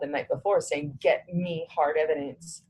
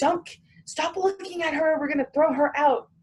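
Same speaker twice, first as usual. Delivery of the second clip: very high-pitched yelling; 12 semitones higher than usual. Retelling what the marshals said to Randy: imitating someone yelling. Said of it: "they were yelling at him, going".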